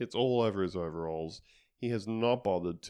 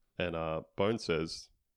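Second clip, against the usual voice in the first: ordinary talk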